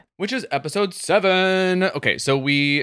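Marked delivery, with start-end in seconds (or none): 0.2-1.9 high-pitched announcer tone. Announcing the next episode number to the other speaker: Oprah voice. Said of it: "why I said it like I'm Oprah".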